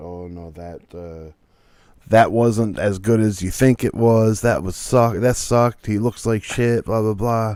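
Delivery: normal talking voice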